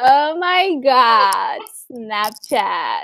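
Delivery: put-on slow, drawled California valley-girl voice.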